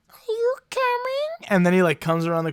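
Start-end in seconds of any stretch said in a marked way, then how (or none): 0.2-1.5 tiny, very high little kitty voice. Retelling a video of a talking cat: little cat voice. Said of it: "But in a little cat voice".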